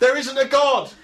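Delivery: shrill, very high, furious shout. Retelling an argument with a woman asking about church: imitating own angry shouting. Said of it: "I was shouting out from across the other side".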